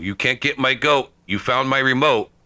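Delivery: acted, excited, high-pitched shouting. Retelling what a guy yelled as the crew was leaving: imitating someone yelling. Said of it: "and he's yelling".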